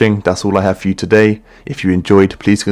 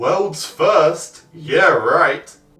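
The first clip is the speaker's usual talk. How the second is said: distant, high, drawn-out shout; 8 semitones higher, 4 dB quieter than usual. A voice from somewhere off mocks a dinosaur's boast, distant shouting. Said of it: "sound like he's standing in the corner of his bedroom shouting".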